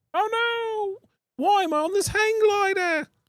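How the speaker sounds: scared cartoon voice, very high, very slow, dragged-out Oh. Describing a character scared on a hang glider, the speaker does a Bluey voice. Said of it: "That's a great Bluey, by the way".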